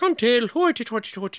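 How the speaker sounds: high leprechaun character voice. Trying out a Scottish or Irish voice for a commenter's word: leprechaun voice. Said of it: "I sound like a leprechaun".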